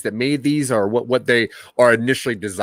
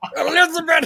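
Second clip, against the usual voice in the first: put-on old man voice, higher. Imitating the old robot doing a Fred Sanford: Fred Sanford voice. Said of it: "he pulled, like, a Fred Sanford".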